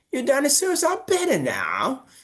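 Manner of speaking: put-on British accent, very high and swooping. Showing one way a line might be said, in a British accent. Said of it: "two ways that you might say this with the British accent".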